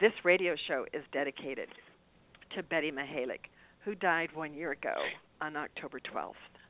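voice getting choked up partway through. Radio host dedicating the show to Betty Mihalik, who died a year ago, choked up. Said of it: "I think I'm getting choked up here".

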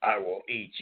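rough, gravel-throated put-on voice. Speaker quoting a very animated guy, imitating a gravelly voice. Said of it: "And he just gets so gravelly".

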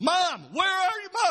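mock child's scream, very high-pitched. Recalling being lost at a fair as a child, calling for mom: imitating own childhood screaming. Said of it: "And I was screaming".

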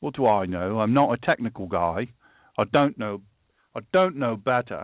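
put-on fake British accent. Joking about not being a technical person: put-on British accent. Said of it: "British accent there".

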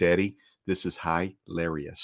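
put-on slow, soft, low, solemn five-year-old's voice.

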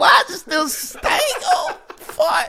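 very high, slow, baffled squeal.

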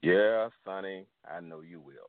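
deep bass voice, dropped low. Retelling the uncle's reply to a five-year-old, imitating a deep bass voice. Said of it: "with this deep bass voice".

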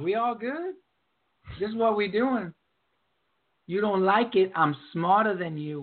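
laid-back, lounging, condescending bossy manner. Retelling a press conference in an exaggerated way: Sandy Alderson impression. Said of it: "And he's like".

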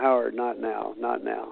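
muttering under breath. Retelling answering a reporter at a funeral: imitating muttering under breath. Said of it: "under my breath somehow".

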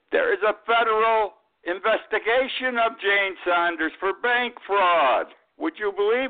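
angry outburst, very high. A speaker addressing listeners, then apologizing for it: raised voice. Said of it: "I'm sorry for raising my voice".

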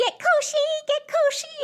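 very high, really goofy voice. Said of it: "in a really goofy voice".

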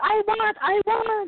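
tiny little voice. Retelling her answer when offered a grape, in a tiny little voice. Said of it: "in little tiny words".

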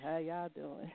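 mock deep, sexy voice. Teasing the guest by repeating the greeting: imitating a deep sexy voice. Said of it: "how your deep voice".

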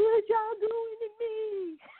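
very high, slow, drawn-out tearful crying wail. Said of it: "when he was on there crying".

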